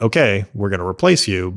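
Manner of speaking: normal talking voice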